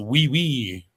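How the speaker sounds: mock, put-on French accent. Reading out a commenter's vote, saying it in a french accent. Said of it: "with the French accent".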